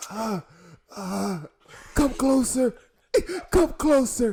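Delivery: mock deathbed voice. Acting out a dying person's last request on their deathbed: dying person voice. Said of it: "'cause they're on their deathbed".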